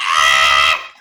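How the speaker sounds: low, loud monster roar.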